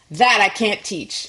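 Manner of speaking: imitated Charleston accent. Retelling what a carriage company owner said, imitating a Charleston accent. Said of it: "that Charleston accent".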